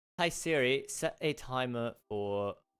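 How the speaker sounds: failed, unconvincing attempt at a British accent. Offering a british voice while speaking to siri, attempted british accent. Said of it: "You want a British voice?".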